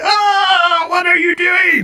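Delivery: very high, drawn-out shrieking creature scream, long ah. Voicing a creature held in place by telekinesis: creature screaming. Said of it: "it screams like".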